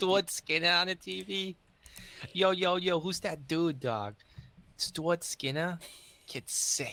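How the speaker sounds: speaking in a Boston accent. Asked by a co-host, speaker says a player's name in a Boston accent. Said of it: "I say Stuart Skinner with the Boston accent".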